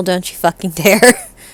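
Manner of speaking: hushed, menacing half-whisper with no voice. Repeating Morgan's line to her in Infernal, in a half-whisper. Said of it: "As she whispers to her in Infernal".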